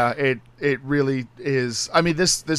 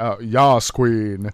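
put-on, deliberately deeper voice, much slower pace; 2 semitones lower, 4 dB louder than usual. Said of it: "I like how you deepened your voice for that".

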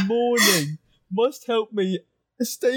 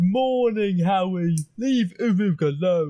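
put-on ogre voice, lower pitch; 3 semitones lower than usual. In a roleplaying game, a player speaks to the group as the ogre Uru: Uru ogre voice. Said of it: "It's an ogre. ... And he smells really bad".

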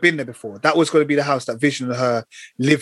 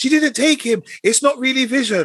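loud shouting voice; 11 semitones higher than usual. Recounting watching a scene, the speaker repeats what they yelled, retelling shouting at the tv. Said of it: "but I was shouting".

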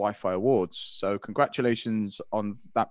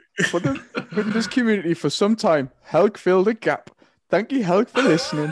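very loud, very high put-on Geordie accent; 11 semitones higher, 8 dB louder than usual. Thanking a listener on air, in a put-on Geordie accent. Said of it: "why I'm putting on the Geordie accent".

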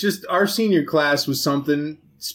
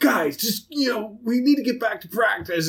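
rough, rasping, raspy voice, pitched up; 7 semitones higher than usual. Recalling how he finally got the guys back to practice, imitating his raspy voice. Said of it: "his raspy voice".

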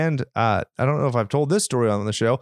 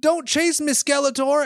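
put-on shrill, very high little-kid shout; 14 semitones higher than usual. Retelling a child who loves Skeletor yelling as she runs off, imitating her yell. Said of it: "she'll yell".

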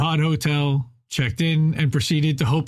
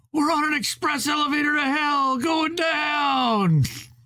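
put-on rowdy drunk hollering, very high, stretched downward; 12 semitones higher than usual. Reading aloud a passenger shouting to a nervous flyer: shouting like a drunken redneck. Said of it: "shouted in his ear like a drunken redneck".

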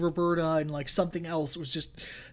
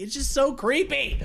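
ordinary delivery

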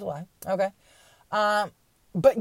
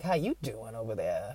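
sleazy, leering come-on tone; 9 semitones lower, 9 dB quieter than usual. Mocking America as a pickup line: skeezy guy at a bar. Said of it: "like some skeezy guy at the bar".

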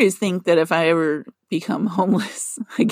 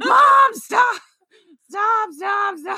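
mock yelling, slow and drawn-out screaming. Telling how their mom backed into a van, the speaker retells a scream. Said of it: "I'm screaming outside the car".

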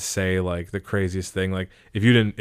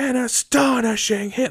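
acted, very high, excited, freaked-out sportscaster voice. Retelling the announcer reacting to a one-hit ko: imitating a freaked-out announcer. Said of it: "he would, like, really freak out".

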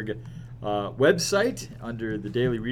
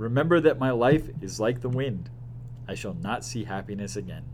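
usual speaking voice

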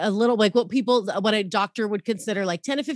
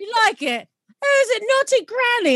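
mock British accent, higher and louder; 13 semitones higher, 4 dB louder than usual. Mocking the voices in British adult videos: imitating a British accent. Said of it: "I can't do British accents".

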